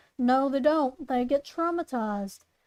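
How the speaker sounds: ordinary talk, nothing marked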